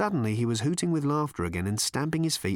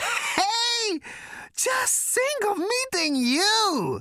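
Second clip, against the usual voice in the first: gasped out mid-laugh, pitched very high. Narrating a character convulsed with laughter on meeting someone, gasping through laughter. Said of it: "he gasped".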